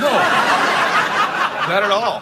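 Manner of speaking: slow, drawn-out, mocking Scottish accent.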